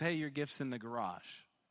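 acted casual indifference. Retelling what he said after opening the gift, imitating a nonchalant tone. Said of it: "he kind of nonchalantly goes".

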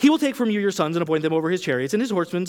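fast, rushed, rattled off like fine print. Reading a passage aloud quick, like end of medical ad. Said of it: "I'm going to read this quickly like it would be at the end of a medical ad".

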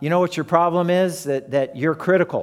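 ordinary talk

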